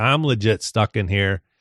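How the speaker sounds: normal talking voice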